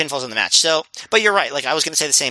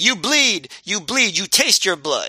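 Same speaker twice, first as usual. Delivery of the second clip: raw, menacing, taunting scream; 4 semitones higher than usual. Retelling a wrestling match, imitating Smokes screaming at Cabana. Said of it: "screaming at Cabana".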